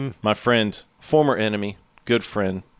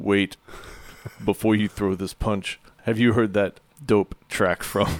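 attempted put-on Russian accent. Retelling what a boxing opponent said mid-fight: attempted russian accent. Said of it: "I wish I could do a Russian accent".

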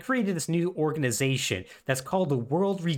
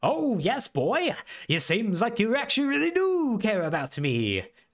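bad, fake, unconvincing Celtic accent, pitched up; 7 semitones higher than usual. Recapping a game scene where Vincent is unimpressed, doing Cait Sith in a bad Celtic accent. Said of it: "Case's in a Celtic accent is like".

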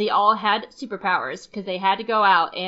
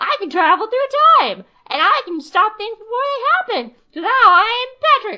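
very high, squeaky, raised voice; 14 semitones higher, 8 dB louder than usual. Voicing a friend as a time traveler with superpowers: squeaky time traveler voice. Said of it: "the squeaky voice time traveler".

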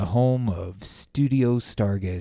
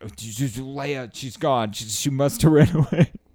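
mock freaked-out, high, panicky voice, one word drawn out; 5 semitones higher, 3 dB louder than usual. Retelling calling David after the dog went missing, acting out freaking out. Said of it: "I'm freaking out and calling David like".

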